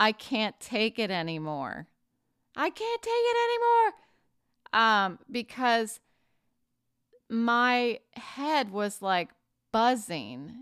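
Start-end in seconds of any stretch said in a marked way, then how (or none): 0.0-5.2 mock despairing yell, rising and swooping in pitch. Alone in the empty house, recalling that moment, retelling a yell. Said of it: "I just yelled".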